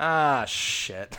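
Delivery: put-on exhausted actress voice. Describing a movie scene where an imp pops up: imitating Linnea Quigley's tired tone. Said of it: "in the most tired tone of voice I've ever heard".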